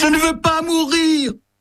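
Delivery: screaming. Talking with her brother Bertie, she repeats the cry, screaming.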